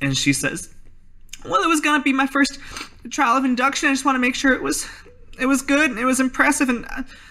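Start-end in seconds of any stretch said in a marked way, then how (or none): 1.4-6.9 near-tears voice, very high, breaking and halting. Asked why she did something so stupid, [name] answers in a tearful [name] voice.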